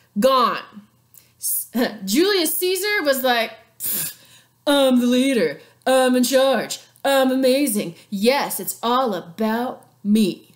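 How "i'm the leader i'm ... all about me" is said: boastful, grandly bragging put-on ruler voice. Explaining the fall of Rome's Republic, in a Julius Caesar voice. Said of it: "Did you like that voice?".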